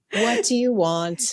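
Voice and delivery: weary, drained, exhausted-sounding voice. Imitating the car's voice assistant answering a prompt: imitating an exhausted mother. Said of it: "It sounds like an exhausted mother".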